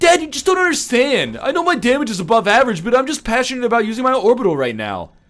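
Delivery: put-on very high, sulky, petulant teenage voice. Playing a teenage son arguing with his dad, petulant teenage voice. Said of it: "very petulant, like, teenage voice".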